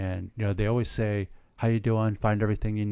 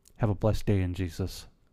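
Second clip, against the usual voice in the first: hushed, soft, close-up quiet murmur. Retelling what a cashier said while leaning in close: imitating someone speaking quietly. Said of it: "And said it quietly".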